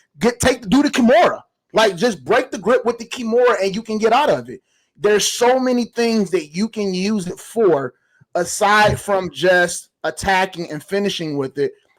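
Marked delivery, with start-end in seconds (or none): 0.2-1.4 high-pitched yelling. Speaker retells yelling at the TV during a UFC fight: retelling screaming at the TV. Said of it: "and I'm screaming".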